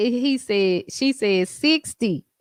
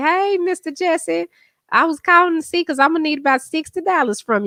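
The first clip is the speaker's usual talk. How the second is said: put-on high-pitched young girl's voice; 6 semitones higher than usual. Retelling a TikTok, imitating the girl asking for money: imitating a girl. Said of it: "the girl say".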